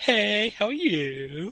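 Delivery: put-on very high, sing-song Valley Girl accent. A player impersonates an elf character, Valley Girl accent. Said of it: "It's like a Valley Girls accent".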